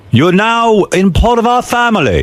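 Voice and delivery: very high-pitched, put-on British accent. Retelling what the man in charge said at a judges dinner, imitating Paul, British accent. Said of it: "British accent".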